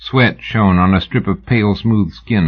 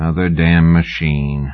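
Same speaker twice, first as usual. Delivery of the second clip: weary, lower pitch; 4 semitones lower than usual. A narrator reads the Texian's reply after a long silence, weary. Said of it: "the Texian said wearily".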